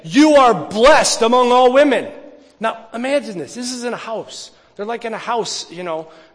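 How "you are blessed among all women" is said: loud, full-throated shout. Retelling one woman greeting another in a house, acting out a shout. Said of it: "She's shouting at Mary".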